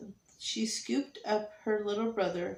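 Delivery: ordinary delivery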